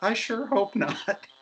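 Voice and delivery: put-on small, high, tiny little girl's voice. Retelling what a voice inside a full costume answered: tiny little girl voice. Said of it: "A little girl voice came out and said".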